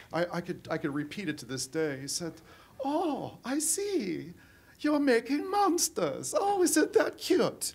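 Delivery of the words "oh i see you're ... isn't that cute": put-on very high, drawn-out, sing-song German accent. Quoting a man on a tour through the prison, in a german accent. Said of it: "I heard this this German accent".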